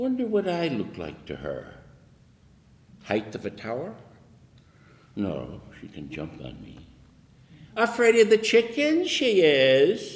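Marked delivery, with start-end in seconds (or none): 7.8-10.2 very high, loud taunting mockery, stretched-out "is". A narrator reads a man's words about his cat, spoken mockingly. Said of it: "he said mockingly".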